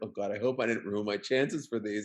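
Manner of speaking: normal talking voice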